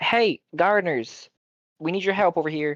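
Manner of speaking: loud, alarmed, urgent, panicked call-out. A player's character calls out to the gardeners, panicked call for help. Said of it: "hearing the panic in the voice".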